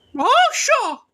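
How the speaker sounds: cartoon mouse character voice, pitched very high. Showing off a pretty good Mickey Mouse voice. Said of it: "I can do a pretty good Mickey Mouse".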